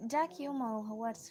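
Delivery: ordinary delivery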